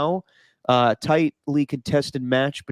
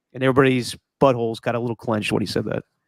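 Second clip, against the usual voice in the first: usual speaking voice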